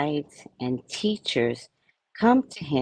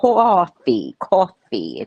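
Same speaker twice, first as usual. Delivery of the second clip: put-on New Yorker accent; 4 semitones higher, 4 dB louder than usual. Retelling answering a kid who asked how to say coffee: new york accent. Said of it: "I had to say it like a New Yorker".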